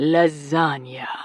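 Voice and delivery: deepest, seductive bedroom voice. Reading a scene where he teases her with food words: deepest bedroom voice. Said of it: "in his deepest bedroom voice".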